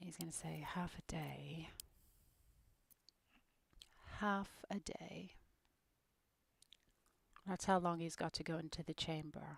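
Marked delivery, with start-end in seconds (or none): 0.7-5.3 soft, slow, hushed near-whisper. Voicing Astarion's next line in a scene: Astarion whispering. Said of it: "he's kind of whispering".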